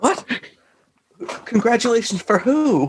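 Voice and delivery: fake alarmed tone. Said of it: "I'm doing my alarmed bit".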